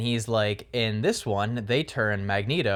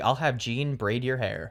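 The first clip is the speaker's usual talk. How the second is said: sassy put-on professor voice; 3 semitones higher than usual. Quoting a movie line said to Wolverine: imitating sassy Professor X. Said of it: "he is so sassy in this".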